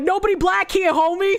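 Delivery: put-on Spanish accent.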